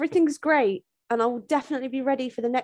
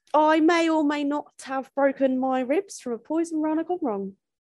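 sudden put-on Australian accent. Asked why she has midsection pain, speaker answers in a sudden australian accent. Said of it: "why you've gone to an Australian accent".

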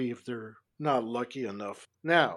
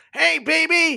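shrill, booming, very high, loud holler; 14 semitones higher, 9 dB louder than usual. Retelling how men called out from cars at his mom: imitating men yelling from cars. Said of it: "all these guys would yell out of the w-, cars".

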